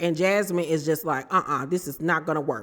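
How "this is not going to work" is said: irritated, lower and quieter. Retelling a complaint about dog hair everywhere: imitating irritated Jasmine. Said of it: "she's irritated as hell".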